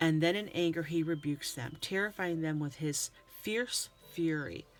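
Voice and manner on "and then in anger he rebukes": plain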